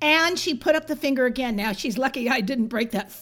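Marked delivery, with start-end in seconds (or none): none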